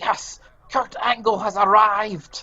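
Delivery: acted-out, excited, very high, drawn-out yell. Retelling how Vince McMahon reacted backstage during the match: imitating someone yelling. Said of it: "he basically yelled out aloud".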